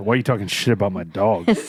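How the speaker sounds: put-on muttering under the breath. Retelling what Jamie said on walking in, imitating Jamie muttering under her breath. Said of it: "under her breath".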